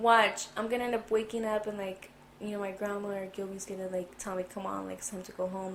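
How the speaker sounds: usual speaking voice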